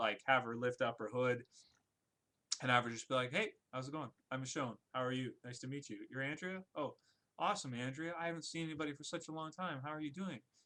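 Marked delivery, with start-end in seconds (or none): 3.3-10.4 put-on timid, friendly voice, quieter. Acting out a predicted scene where Michonne greets Andrea: timid, nice Michonne voice. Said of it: "just such a timid, like, speak like just such a nice person".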